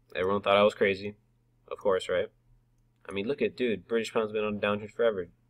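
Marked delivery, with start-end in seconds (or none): none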